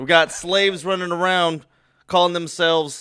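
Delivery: very loud, high, fake Southern drawl. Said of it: "I like the impression".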